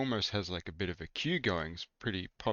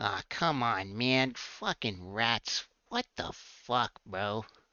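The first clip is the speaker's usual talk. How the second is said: put-on old gnome character voice; 3 semitones higher than usual. A storyteller voices a gnome chasing rats out, in an old gnome voice.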